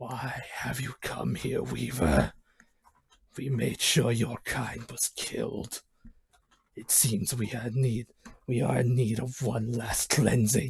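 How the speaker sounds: weird, eerie, creepy half-whisper, very low. Narrating a man confronting the player, in a weird, creepy, somewhat whispered voice. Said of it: "in a weird, creepy voice, but yet still somewhat whisper voice".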